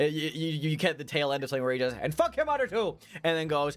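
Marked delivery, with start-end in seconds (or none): 2.0-3.0 very high, thick Irish brogue. Voicing a character shouting on a phone line: Mickey Mahoney's thick Irish brogue. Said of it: "the familiar thick Irish brogue of".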